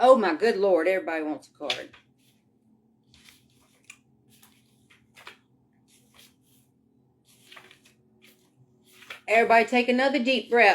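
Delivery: words breaking up with giggles while talking. Shuffling cards and asking everyone to breathe, laughing while talking. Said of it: "I got the giggles".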